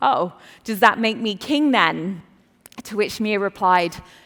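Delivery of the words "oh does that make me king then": play-acted sarcastic tone. Retelling a dad's reply to his three-year-old daughter: imitating a sarcastic reply. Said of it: "her dad immediately sarcastically responds".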